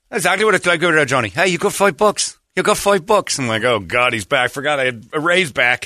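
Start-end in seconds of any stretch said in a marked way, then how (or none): 0.2-3.4 put-on old trainer voice, Irish accent, much higher. Speaker imagines his old boxing trainer answering him: imitating Ray's Irish accent. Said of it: "every thought I have is in an Irish accent".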